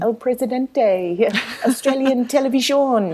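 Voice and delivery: clumsy put-on Spanish accent. Tv reporter retelling calling out to the president on catching him; bad spanish accent. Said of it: "in my very best sort of, you know, bad accent".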